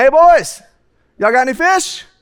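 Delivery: mock loud, high hollering. Retelling a Bible scene from a fishing boat: Jesus hollering. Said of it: "I see Jesus hollering right here".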